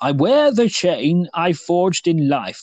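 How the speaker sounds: slow, unhurried, very posh, grand upper-crust delivery. Quoting the ghost's line from the story, in a posh Jacob Marley voice. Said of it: "What it was very posh".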